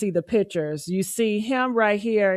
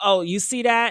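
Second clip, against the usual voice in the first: put-on laughing voice. Describing the guy in the back, imitating him laughing. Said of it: "he's laughing like".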